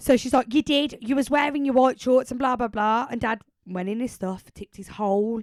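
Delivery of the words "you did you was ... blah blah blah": mock angry, loud, fuming voice. Retelling mum accusing dad the next day: imitating mum fuming. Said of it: "She's fuming at him".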